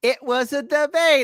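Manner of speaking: very high pitch, slow, drawn-out, lingering words. Correcting the other speaker on how she said it in the debate: Kamala Harris impression. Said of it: "She said it like this".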